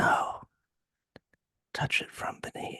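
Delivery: put-on faint, thin, whispery ghost-child voice. Retelling a ghost story, voicing the ghostly child in a thin whispery voice. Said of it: "this thin little whispery voice and it says".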